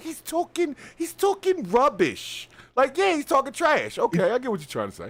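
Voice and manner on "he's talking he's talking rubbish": high, slow mock British accent. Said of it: "that accent ... she's like".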